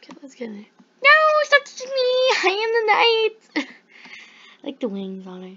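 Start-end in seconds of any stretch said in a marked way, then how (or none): 1.0-3.7 very high, loud cartoon pony voice. Playing a pony game and voice-acting each pony, first up Luna: Luna voice. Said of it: "I'm going to voice act them".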